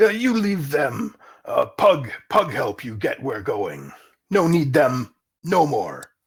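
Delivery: slow, swooping orc voice with broken grammar. Narrator voicing the orc scout who offers to guide the player: Pug the orc voice. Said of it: "and it's not long before you come across an orc scouting party. / Okay, he pockets the gold piece and he laughs with his other orc scouts. / Okay, he pockets the gold piece and he laughs with his othe".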